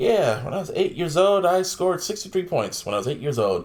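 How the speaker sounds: usual speaking voice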